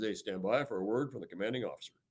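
low, soft radio announcer voice. Retelling how the guy announced the commanding officer, in a radio announcer voice. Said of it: "the guy in his best voice, radio voice".

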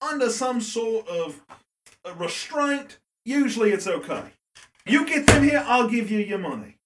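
drifting put-on Irish accent. Game master voicing a taxidermist offering payment for captured creatures, drifting put-on irish accent. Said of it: "No, but I will taxidermy it for you if you bring something in here. ... I'm Irish now! Why are you Irish now? Why was that a four? Oh, I failed my deception! We know why it was a four, [name]. We know why it was ten. A four. Look, you bring it back here".

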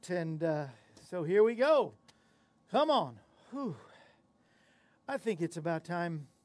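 very low, puffing, winded and breathless. Starting a live recording for an audience, out of breath. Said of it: "I'm out of breath".

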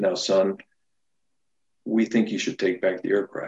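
put-on loving, calming tone. Retelling a mother on the phone to her son, imitating a loving, calming tone. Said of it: "She says some very loving, calming words".

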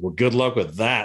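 ordinary talk, nothing marked

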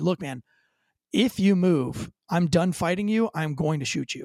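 mock very calm delivery. Retelling what he told the man he was fighting, acting out speaking very calmly. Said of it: "I say very calmly before I yell at him".

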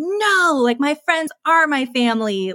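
put-on high, insistent sixteen-year-old protesting tone. Recalling arguing with mom at sixteen about friends, retelling a yell. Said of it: "And I remember yelling at her".

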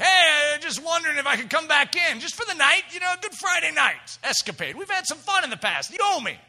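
put-on whiny old man voice. Voicing the old man knocking to be let back in: whiny old man voice. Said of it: "the old man's whine".

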